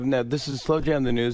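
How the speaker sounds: ordinary delivery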